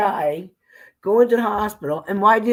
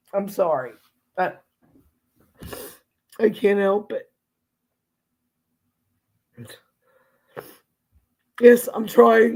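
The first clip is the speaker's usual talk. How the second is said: breaking down in tears. Talking about saying goodbye and turning off the machines, the speaker is breaking down. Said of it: "I'm breaking down".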